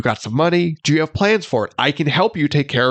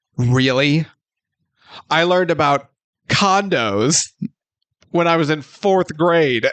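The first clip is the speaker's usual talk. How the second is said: plain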